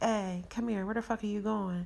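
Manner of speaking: usual speaking voice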